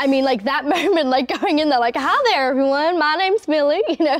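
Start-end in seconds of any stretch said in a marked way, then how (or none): 2.0-3.8 put-on Southern accent, laid on thick, pitched high. Retelling introducing herself to everyone after getting the job, in a full-on Southern accent. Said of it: "like doing this full-on Southern accent".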